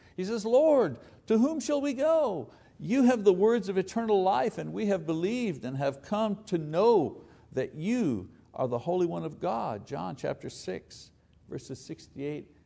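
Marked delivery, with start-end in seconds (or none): 0.5-9.9 play-acted aching, heartfelt, pained pleading voice. A speaker quotes Peter's reply to Jesus, acting out a pained plea. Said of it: "You can almost hear the pain in his voice".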